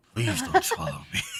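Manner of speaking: very quiet speech. Playing a character inside a creature's mouth: speaking very quietly. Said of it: "Rem very quietly goes".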